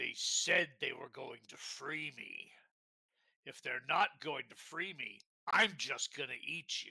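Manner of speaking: rumbling voice of a huge dragon. A game narrator voices a dragon heard in the background: rumbling dragon voice. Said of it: "a rumbling dragon's voice say".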